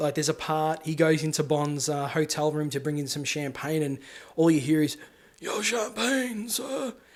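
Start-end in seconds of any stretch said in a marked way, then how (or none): 5.4-6.9 soft, high, little half-whisper. Describing a Bond character bringing champagne to the hotel room: imitating Half-whisper's half-whisper. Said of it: "he whispers everything".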